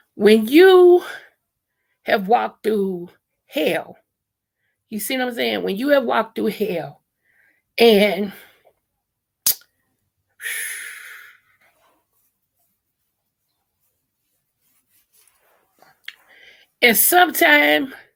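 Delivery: voice holding back tears. Speaking to the viewers while trying not to cry: holding back tears. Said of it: "I'm trying to say this without crying".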